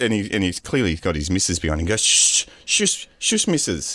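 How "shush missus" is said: put-on German accent, much higher pitch. Retelling how a man hushed his wife, attempted german accent. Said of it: "He's got a German accent".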